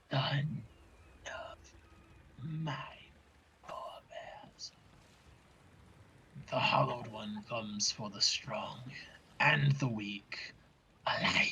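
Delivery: low, throaty, guttural reptilian serpent-like whisper. Voicing a huge creature hidden in the tree line, low guttural reptilian voice. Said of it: "in this low, guttural, very reptilian voice".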